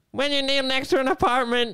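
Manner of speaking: very high cartoon voice. Trying out an impression after others did cartoon voices: SpongeBob voice.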